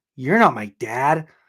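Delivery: put-on little growling kid voice. Retelling a dream about a little kid: imitating a kid's little growl. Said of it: "And he did that little growl".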